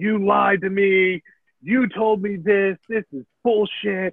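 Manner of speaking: accusing, angry rant, played down and mild. Telling a story about a CTO screaming at a man, retelling someone screaming. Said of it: "screaming at him".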